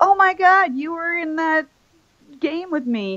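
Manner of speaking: very high, gushing, excited squeal. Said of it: "we didn't all go like".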